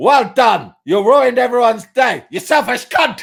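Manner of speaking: put-on loud yelling. Retelling what a man shouted at the speaker, retelling a loud shout. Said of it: "really, really loudly".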